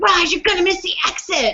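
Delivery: acted sharp, irritated tone. Retelling snapping at a partner over a missed exit, imitating her own angry snap. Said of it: "And I was pissed".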